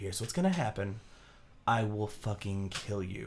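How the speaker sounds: put-on calm, cool voice. Speaker retells a character leaning in with direct eye contact, imitating calmest, coolest voice. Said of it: "in the calmest coolest voice being like".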